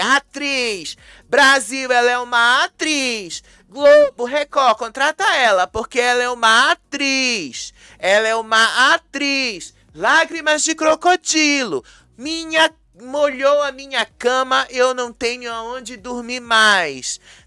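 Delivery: high mocking jeering shout, mais drawn out. Recounting how Rayane came in and started yelling, imitating someone shouting into a microphone. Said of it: "começou a de gritar assim pro microfone".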